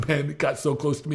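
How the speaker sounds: usual speaking voice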